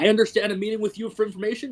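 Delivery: heavy, thick, hard bellowing chest voice. A player voices a character in the game: bellowing, thick, hard voice. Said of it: "a much thicker, like harder voice".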